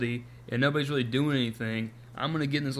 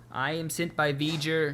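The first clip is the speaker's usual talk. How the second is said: very slow, drawn-out, mechanical robot voice; 3 semitones higher than usual. Retelling a story where a character comes back sounding like a robot, robotic Ilia voice. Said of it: "she sounds like a robot".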